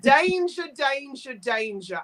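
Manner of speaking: plain Australian-accented speech. Showing off an Australian accent on danger, danger, danger: Australian accent. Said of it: "also my Australian accent".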